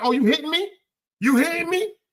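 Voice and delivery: high, accusing, protesting woman's voice. Retelling what the woman said as he reached over: imitating a woman in a car. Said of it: "she was like".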